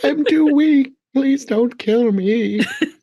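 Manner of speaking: put-on very high, helpless little old man voice. Retelling a film scene, quoting a villain faking helplessness: Palpatine as a helpless old man. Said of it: "Palpatine pretends to be a little helpless old man".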